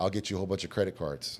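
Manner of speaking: ordinary talk, nothing marked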